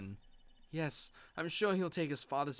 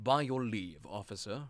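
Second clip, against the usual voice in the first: put-on German accent, lower; 5 semitones lower than usual. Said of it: "the same voice as the other guy".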